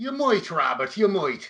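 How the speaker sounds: slow, bad mock Irish accent.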